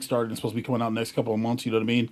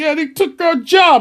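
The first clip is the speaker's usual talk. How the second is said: very high, shrill, loud angry rant; 10 dB louder than usual. Mimicking people reacting to rage bait: imitating angry rage-bait energy. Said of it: "that kind of energy".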